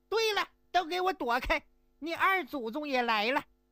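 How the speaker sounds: sharp, thin, shrill shout pitched high. Storyteller voicing a second character in the tale, a thin shrill shout. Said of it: "就听一个尖细的声音喊".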